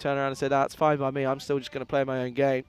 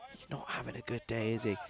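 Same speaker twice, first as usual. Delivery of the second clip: said under the breath, very quiet, barely audible; 3 semitones lower, 11 dB quieter than usual. Commenting on a batsman standing in front: saying it quietly. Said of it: "I'm gonna say it quietly".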